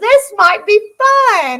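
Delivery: mock, very drawn-out, slow giddy delight. Retelling how another man reacted, imitating giddy excitement. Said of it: "He sounded giddy as could be".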